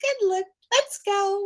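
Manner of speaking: very high, cheerful, coaxing happy dog voice. Retelling walking a reactive dog past another dog: imitating own happy voice to a dog. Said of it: "using happy voice and all this stuff".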